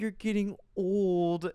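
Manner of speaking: play-acted tearful, crying voice. Retelling a partner crying while picking out gray hair: imitating someone crying. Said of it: "just starts crying 'cause she's like".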